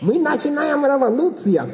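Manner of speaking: play-acted thrilled exclamation, very high pitched. Retelling what she said when she called him: imitating her excitement. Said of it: "she's all excited".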